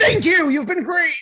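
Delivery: very high-pitched comic delivery. Signing off the show the way George always does: George Costanza voice. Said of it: "like George always does when he wants to leave".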